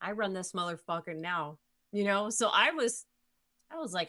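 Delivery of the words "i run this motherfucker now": plain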